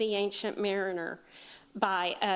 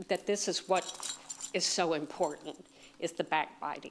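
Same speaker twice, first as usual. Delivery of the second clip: low, trembling voice shaking with anger; 4 semitones lower, 3 dB quieter than usual. Speaker addressing the group about the staff, voice shaking with anger. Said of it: "my voice is shaking because I'm really pretty angry".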